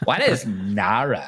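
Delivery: put-on slow, drawn-out California accent, mean-girl voice. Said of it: "a mean girl from California".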